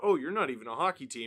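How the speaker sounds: ordinary talk, nothing marked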